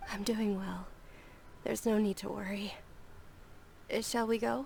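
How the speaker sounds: weary, tired-sounding. A game character, asked if she slept enough, answers sounding tired. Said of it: "you sound kinda tired".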